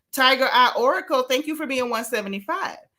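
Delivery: ordinary talk, nothing marked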